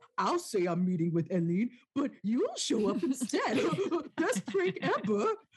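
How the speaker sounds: high, excited, gleeful dork voice. Recapping a scene, mocking Johan Lars in a put-on dork voice. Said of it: "That was my dork voice".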